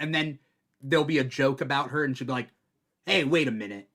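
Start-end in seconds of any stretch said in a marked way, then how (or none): 3.0-3.7 harsh, grating put-on abrasive voice. Imitating how she reacts when a joke is about her, mimicking an abrasive voice. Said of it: "the really abrasive one".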